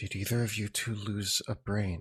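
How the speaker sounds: very quiet, hushed half-whisper. Turning to two companions as a creature stops dead nearby: quiet half-whisper. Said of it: "quietly whisper".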